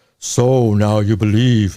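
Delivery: very slow, deep, dropped voice. Telling a joke, a voice from above speaks to the man: voicing God. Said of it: "he hears his voice".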